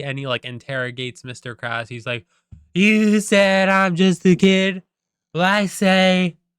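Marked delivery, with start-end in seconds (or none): 2.7-6.3 very slow, booming, loud, high, drawn-out outburst. Retelling a movie scene where SpongeBob confronts Mister Krabs: imitating SpongeBob saying it really loud. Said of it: "really, really loud".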